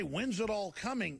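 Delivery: ordinary delivery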